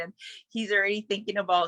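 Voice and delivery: ordinary talk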